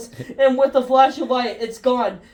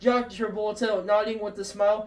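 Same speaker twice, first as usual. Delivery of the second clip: usual speaking voice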